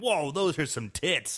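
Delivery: put-on, acted excited tone. Retelling a reaction to a movie scene: imitating an excited reaction. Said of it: "Sorry, I got really excited there".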